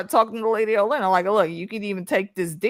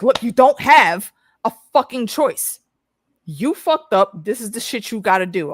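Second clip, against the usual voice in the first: put-on, stern, fatherly dad voice. Retelling how he shut down their protesting, in a put-on dad voice. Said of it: "until he puts on the dad voice".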